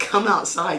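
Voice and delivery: ordinary talk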